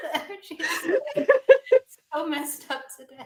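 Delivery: cracking up mid-sentence. Talking to guests during a giggly session, laughing while talking. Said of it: "I'm just cracking up".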